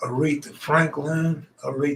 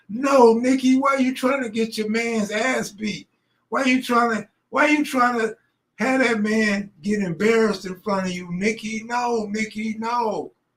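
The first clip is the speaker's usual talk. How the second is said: shrill, high-pitched screaming and yelling; 7 semitones higher than usual. Retelling reacting to a video on the phone: retelling screaming at phone. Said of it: "I'm screaming at my phone".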